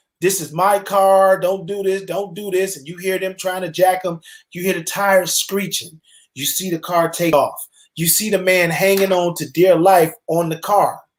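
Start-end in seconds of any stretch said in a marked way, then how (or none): 0.2-2.8 mock, acted hollering. Telling a story of girls taking a man's car, retelling his hollering. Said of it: "he was hollering".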